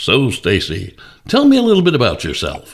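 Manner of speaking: swooping, newsy radio announcer voice. A host recalls how he once interviewed guests on the show: radio voice. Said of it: "I'd use the radio voice".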